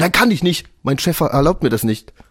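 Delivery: mock irritated clerk voice. Retelling the gas station attendant's answer to a request to charge a phone, mimicking an annoyed clerk. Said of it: "richtig das pisst schon".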